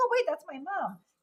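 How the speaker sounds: high-pitched dog voice. Showing the dog on camera, voicing the dog's thoughts. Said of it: "she's like".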